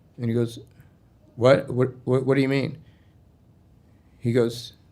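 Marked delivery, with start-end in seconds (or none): none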